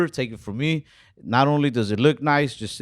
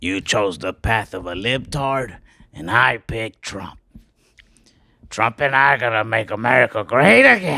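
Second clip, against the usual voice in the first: put-on villain voice. Joking about a Republican version of the villain, doing Norman Osborn voice. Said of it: "of Norman Osborn if he was Republican".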